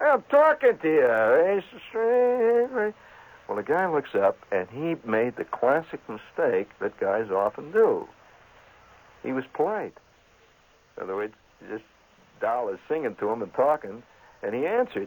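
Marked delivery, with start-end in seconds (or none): 0.0-2.9 mock drunk woman voice, higher. Retelling how a woman on a bus talked to a stranger: imitating a drunk woman. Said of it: "Have you ever had a drunk level in on you?".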